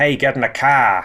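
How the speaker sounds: put-on good, convincing Boston accent. Recalling a scene from a film with the mayor of Peachtown, in Douglas Daviston's Boston accent. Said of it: "he did do a very good Boston accent".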